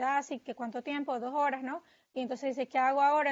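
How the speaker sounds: normal talking voice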